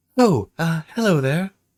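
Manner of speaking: flamboyant high voice. Narrating a scene, voicing a man who greets the players: flamboyant manner. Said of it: "He has a um, um, flamboyant manner".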